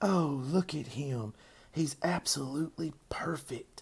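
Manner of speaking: slow, high, hushed whisper, drawn out gently. A girl who can't take her eyes off the pig, whispered. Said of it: "she whispered".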